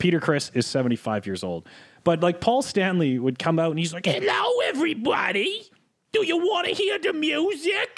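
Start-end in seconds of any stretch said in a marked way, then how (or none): 4.0-8.0 high, sing-song voice. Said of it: "I'm I'm nailing it. Like that was his voice".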